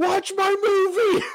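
shrill, very high, loud scream. Retelling a man leaning out a window at people at a bus stop: imitating a scream. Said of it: "he just screams".

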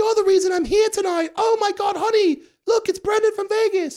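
put-on very high, very loud, shrill drunk British girl voice. Recounting a stranger approaching him at dinner with his wife, imitating a drunk british woman. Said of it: "there's this drunk british girl and she's like".

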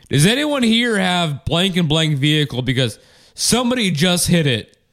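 ordinary talk, nothing marked

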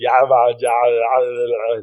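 put-on, easygoing, relaxed Jamaican accent. Announcing he's going into a voice, then showing it, Jamaican voice. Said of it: "I'm going in Jamaican voice".

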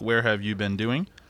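usual speaking voice

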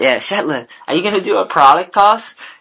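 put-on high-pitched little kid voice with Australian accent. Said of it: "he says it with an Australian accent".

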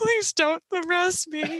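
mock tearful crying, high-pitched and slow. Retelling own words on the phone after a mistaken nine one one call: imitating own past crying. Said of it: "crying on the phone".

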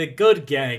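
ordinary delivery

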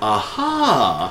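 sing-song, high-pitched aha.

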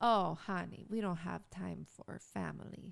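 put-on heavy, laid-on, thick Russian accent. Quoting a woman's answer to the speaker's question about family, in a thick Russian accent. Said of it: "in her thick, like, ... Russian, I think, accent".

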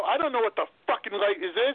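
mild, held-back, half-yelled outburst. Retelling yelling back at a kid who said to fix the light, retelling a yell. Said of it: "And I yelled at I".

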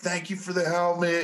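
put-on tiny little child's voice, very high pitch. Retelling what a young boy said about a signed helmet, in a little kid voice. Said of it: "this little kid voice".

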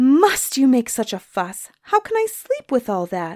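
loud, high-pitched scolding shout. A woman confronts the screaming griffin and scolds him, shouting at him. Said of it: "she shouted at him anyway".

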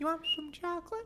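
very high-pitched cartoonish old-man voice. Correcting another speaker about whose voice it was: Family Guy old man voice. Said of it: "That's the old man who's like".

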